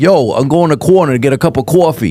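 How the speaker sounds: put-on thick Brooklyn accent. While comparing accents, the speaker imitates guys from Brooklyn: Brooklyn accent impression. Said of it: "you hear the guys from like Brooklyn".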